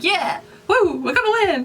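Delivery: excited cheer from a group.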